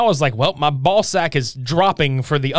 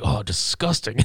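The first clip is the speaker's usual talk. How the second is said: hushed, whispered mutter under the breath; 6 semitones lower, 6 dB quieter than usual. Recounting a man's reaction in a scene, imitating muttering under breath. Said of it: "the way he says it just under his breath".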